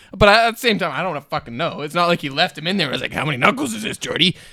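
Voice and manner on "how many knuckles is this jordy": as creepy as possible, put-on voice. Retelling what was said to Jordy: retelling own creepy voice. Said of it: "me being as creepy as I could".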